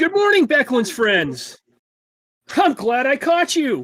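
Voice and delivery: put-on very high, bright, cheerful young voice. Narrating the game, voice a young man who comes around the corner, cheerful young man voice. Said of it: "you hear a very cheerful voice from a young man".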